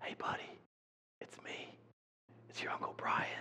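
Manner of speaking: soft, hushed, reassuring whisper close to ear. Retelling the uncle inside the cow costume: imitating a whisper. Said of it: "he whispers at him".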